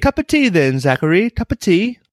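put-on British accent. Congratulating Zachary on guessing correctly, in a fake British accent. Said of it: "I don't think that's British".

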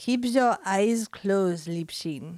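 put-on composed, unhurried, cool German accent. Reading a story aloud, voicing a calm hypnotist: cool quiet voice with german accent. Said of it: "in that cool, quiet voice of his".

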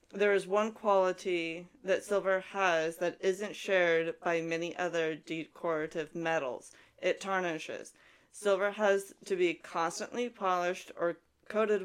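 ordinary talk

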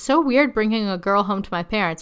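ordinary talk, nothing marked

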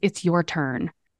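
hushed whisper. Retelling what a man leaning on the speaker said: retelling a whisper. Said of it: "he whispers".

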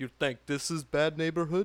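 badly done, fake, put-on Russian accent. Retelling how he answered two guys who came up to him, fake Russian accent. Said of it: "I just fake a Russian accent".

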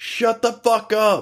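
mock very high, slow, drawn-out yell. Retelling a customer yelling from down the aisle: imitating someone yelling. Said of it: "some guy down the aisle just yelled out".

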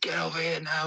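acted, very high screaming. Retelling a training session where the manager screams at a late player: imitating a manager screaming. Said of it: "Uwe Rosler's screaming at him".

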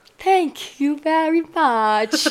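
prim, delicate, very high, bad fake British accent. Describing how Nathan does a British accent, the speaker imitates him: Nathan's bad, really high British accent. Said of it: "he goes really high and he'll just go".

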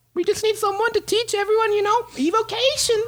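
very high, small halfling character voice. Game master voicing the wizard who does the school's hiring, interviewing an applicant: halfling wizard character voice. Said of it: "the door opens up and you see a halfling walk in, / He is one of the top wizards here at our school, and he He does most of the hiring. / the door opens up and you see a halfling walk in, / He is one".

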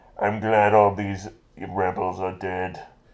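put-on masked villain voice. Retelling a Star Wars scene, speaker voices Darth Vader: Darth Vader voice. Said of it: "he sounds like this".

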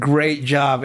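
sarcastic, mock-praising delivery. Showing how a comment sounds when spoken: sarcastic praise. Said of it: "in that tone".

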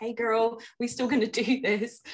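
put-on American accent. Quoting the listener's old email back to her, in a put-on American accent. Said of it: "she made an American accent somehow".

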